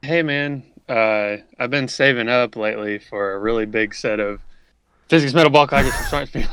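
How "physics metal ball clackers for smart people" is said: loud, rushed, phrase run together as one word. Saying a long phrase as if it were one word, rushed together very fast. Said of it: "you have to say it really fast so they know it's all one word".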